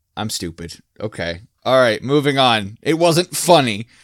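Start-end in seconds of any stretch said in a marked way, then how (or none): none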